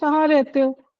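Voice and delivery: plain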